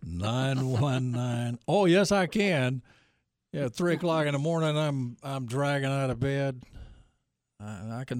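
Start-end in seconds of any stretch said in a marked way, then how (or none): 0.0-1.6 very slow, stretched-out delivery. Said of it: "Everybody's gotta slow down".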